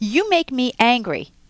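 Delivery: accusing, blaming tone with wide pitch swings.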